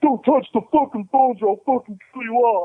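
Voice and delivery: frantic, panicked, very high-pitched delivery. Retelling what a panicked robber said when the phone rang: imitating a panicked robber's threat. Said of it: "So he panics and he comes back".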